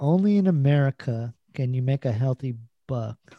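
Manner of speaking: normal talking voice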